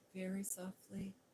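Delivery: ordinary delivery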